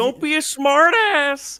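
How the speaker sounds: very high, loud, drawn-out slow voice. Retelling someone's line while announcing Kermit the Frog: Kermit the Frog voice. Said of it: "Kermit the Frog here".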